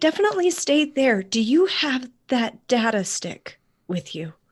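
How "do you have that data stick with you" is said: hushed whisper. Talking to someone waiting to be reached, whispering. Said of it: "Why are we whispering?".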